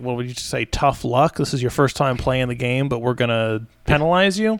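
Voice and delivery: ordinary talk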